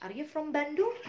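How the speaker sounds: rising tune at the end on Bandung. Teaching yes-no question intonation in english: rising intonation on bandung. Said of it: "Itu naik gitu".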